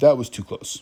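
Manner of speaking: normal talking voice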